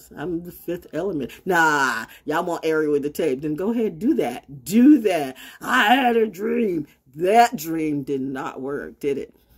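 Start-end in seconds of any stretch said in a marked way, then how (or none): 5.6-9.3 heavy, slow sarcasm with mocking irony. Addressing people who wronged them, the speaker is sarcastic. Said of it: "now I'm being sarcastic".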